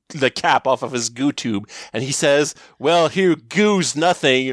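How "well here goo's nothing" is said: threatening, menacing bad-guy delivery. Retelling a Power Rangers villain standing over a hurt woman, mock-menacing villain line.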